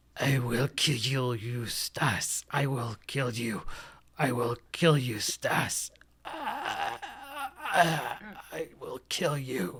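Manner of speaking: ghost voice muttering quietly. Voicing an apparition close by: ghost muttering under its breath. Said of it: "apparition talking kind of almost under its breath".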